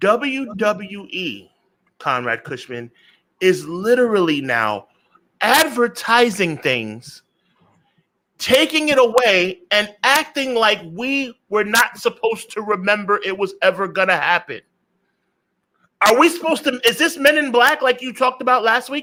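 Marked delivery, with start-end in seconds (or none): 0.0-14.6 very slow, deliberate, each word spelled out, enunciated. Addressing the audience, saying it real slow to enunciate the point. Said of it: "I'm going to say it real slow just to enunciate".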